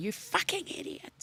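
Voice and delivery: mock breathy, whispered, enraged, furious voice. Retelling how the other driver, arms out the window, yelled: imitating an angry driver yelling. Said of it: "Does he lose his temper with me?".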